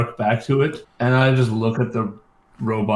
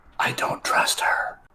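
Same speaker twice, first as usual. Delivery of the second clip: speaking in a whisper. Following a freed prisoner closely so the robot can't hear: whispering. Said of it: "try to whisper so that Miette can't hear".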